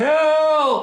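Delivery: shrill, very high, drawn-out cry. Speaker showing listeners how to call for help in an emergency: calling for help. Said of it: "you need to call for help".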